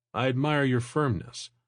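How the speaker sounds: ordinary delivery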